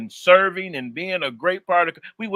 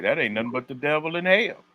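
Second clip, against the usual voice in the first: plain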